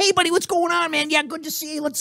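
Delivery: very high-pitched voice. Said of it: "they go like".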